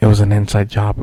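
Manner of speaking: muttering under breath. Retelling what the guy at the register said, imitating someone muttering under his breath. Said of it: "you could hear him under his breath go".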